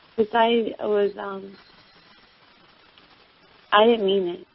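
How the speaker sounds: sounding down. Apologizing to another speaker after a quarrel, sounding down. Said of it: "You really sound down".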